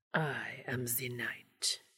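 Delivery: terrible put-on Transylvanian accent, very quiet low whisper. Hugging someone from behind, he speaks into their ear in a terrible faux Transylvanian accent. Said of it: "affected a terrible faux Transylvanian accent and whispered".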